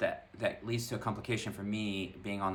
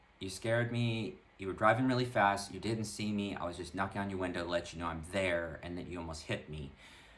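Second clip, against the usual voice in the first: ordinary delivery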